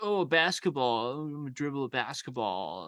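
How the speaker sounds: put-on tipsy, boozy, drunken delivery. Retelling a horror movie scene with a drunk character: imitating a drunk character. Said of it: "drunk and he's like".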